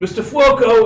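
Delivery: very high, very loud, shrill, booming shout. Knocking on a door, imitating the driver's voice. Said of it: "try to imitate the driver's voice again".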